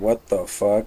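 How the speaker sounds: very quiet mutter, barely audible, under the breath. Retelling muttering after a man walks away from an argument, muttered under breath. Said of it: "so I mutter under my breath".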